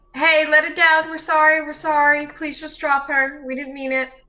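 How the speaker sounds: loud high-pitched yell. Yelling in character at a tree choking a companion: yelling in character. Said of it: "I'm gonna yell at him".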